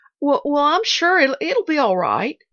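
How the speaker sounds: stammering. Narrator reads Nancy's answer to Pollyanna: stammering. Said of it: "Nancy managed to stammer".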